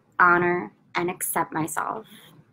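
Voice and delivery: slow, unhurried delivery, each phrase separated by long pauses.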